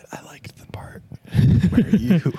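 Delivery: hushed whisper. Playing a big man backstage giving feedback on a set: whispering feedback. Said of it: "he whispers what he thought about your set".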